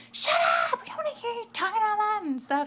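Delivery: very high, shrill, loud screaming. Retelling how a girl started screaming at a lady: imitating someone screaming. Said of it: "she starts screaming at the lady".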